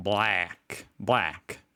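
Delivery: put-on Australian-accented voice. Retelling how the Australian woman said the word, Australian accent. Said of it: "The Australian, she was like".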